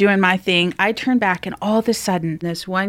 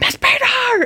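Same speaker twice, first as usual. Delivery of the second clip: mock shout, high and raised, like calling out; 10 semitones higher than usual. Speaker recounts calling for a teacher to come over, retelling a yell. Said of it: "because I'm yelling".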